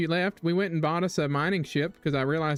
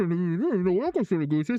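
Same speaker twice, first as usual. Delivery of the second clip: put-on muffled, hooded-sounding voice; 2 semitones higher than usual. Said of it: "the uh, um muzzled voice going".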